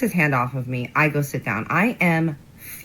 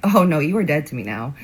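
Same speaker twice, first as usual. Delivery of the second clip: ordinary delivery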